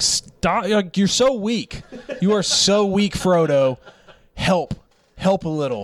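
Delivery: put-on, high-pitched yelling. Speaker retells yelling at Frodo while watching with a roommate, reenacted yelling. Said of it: "I kept yelling".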